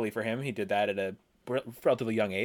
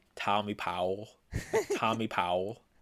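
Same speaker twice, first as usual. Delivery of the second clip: strained put-on American accent with swooping pitch. Ranking players, the speaker does a Tumani impression saying a player's name. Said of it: "I'm going to try to do a Tumani impression".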